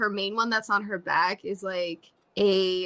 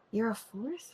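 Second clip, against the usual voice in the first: soft, hushed, half-whispered little aside; 2 semitones higher, 8 dB quieter than usual. Their character leans over to another character to ask something, half-whispering. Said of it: "just kind of whisper".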